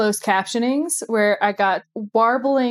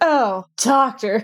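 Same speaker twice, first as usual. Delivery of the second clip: mock glum, deflated, deeply depressed, downcast tone. Retelling a cliffhanger scene, imitating Sarah Jane, depressed. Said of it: "in the most depressing manner".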